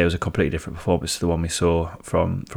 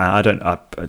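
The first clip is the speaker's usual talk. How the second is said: normal talking voice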